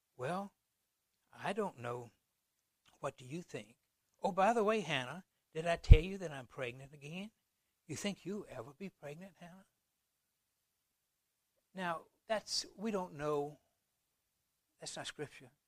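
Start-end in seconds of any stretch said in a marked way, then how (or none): 0.2-9.7 needling, taunting, irritating, grating tone. Acting out a mother answering a child: voicing Peninnah. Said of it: "this is Peninnah speaking".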